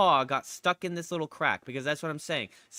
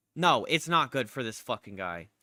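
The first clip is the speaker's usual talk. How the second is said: plain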